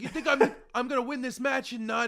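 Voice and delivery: put-on loud, high New York accent. Quoting someone about winning a match, slip into a Taz voice despite saying you wouldn't. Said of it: "my like person who's like maybe from New York voice".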